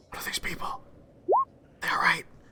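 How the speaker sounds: hushed, soft half-whisper. A game narrator's hooded character leans close to a player, sort of whispering. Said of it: "kind of whispers to you like".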